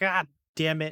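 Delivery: high, angry cry of pain. Voicing a hit officer clutching his leg: angry pained outburst. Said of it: "he's very angry and mad".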